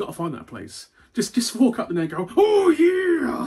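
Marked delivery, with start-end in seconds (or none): 2.4-3.5 bad put-on yell, very loud, high, drawn-out "yeah". Showing how to get half price at the restaurant: Macho Man impression. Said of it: "Told you I can't do a good one anymore".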